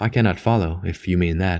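plain reading voice

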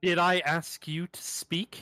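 furious. Voicing a character who just slapped a prisoner: very angry character. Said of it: "Very angry Ionos".

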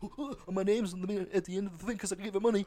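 high, stuttering cartoon voice. Imitating someone who gave money finding their name in credits: sounding like Porky Pig. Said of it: "you sound like Porky the Pig there".

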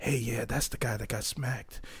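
low, soft whisper. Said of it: "walking past all of the whispers like".

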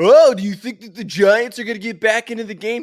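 high, loud caricatured voice. Retelling a friend's phone call during a losing game: imitating Sean's voice. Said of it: "What impression is that?".

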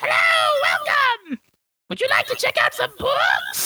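very high, shrill shouted monster voice. Voicing a tentacled library creature greeting visitors: monster librarian greeting. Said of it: "It's like".

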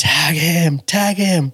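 mock very high, stretched-out scream. Retelling screaming at the player to tag the runner: retelling own screaming. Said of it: "I'm screaming".

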